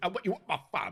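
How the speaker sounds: high-pitched put-on voice. Trying out another player's line, imitating Geordie. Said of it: "I can do it like Geordie".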